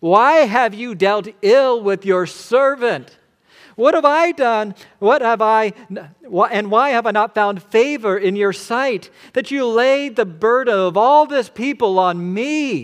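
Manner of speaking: high, loud, anguished, desperate pleading.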